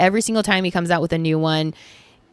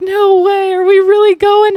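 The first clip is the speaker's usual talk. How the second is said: put-on very high, loud, sobbing tearful crying; 13 semitones higher, 8 dB louder than usual. Retelling a mom's reply during a phone call, imitating someone crying. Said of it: "crying on the phone".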